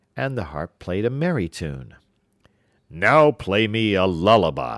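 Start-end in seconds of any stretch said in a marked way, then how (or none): 2.9-4.8 slow, booming, roaring giant voice. Narrator reads the Giant ordering his harp to play, roaring giant. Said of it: "roared the Giant".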